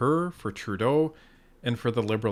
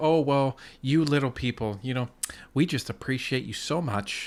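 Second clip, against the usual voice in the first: put-on condescending, talking-down tone; 3 semitones higher than usual. Mocking a woman who talks down to people, mocking a condescending tone. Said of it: "she was saying in such a condescending tone".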